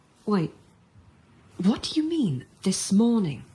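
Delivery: sudden, surprised, taken-aback delivery. Told a gang boss arrived this morning, a man questions the timing: surprised. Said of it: "You sound surprised".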